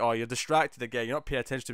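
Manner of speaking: ordinary talk, nothing marked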